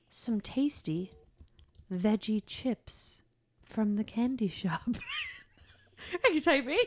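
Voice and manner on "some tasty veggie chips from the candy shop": slow, hushed, halting delivery with dramatic pauses. Dictating while the other person types, with dramatic pauses. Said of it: "I'll just take dramatic pauses".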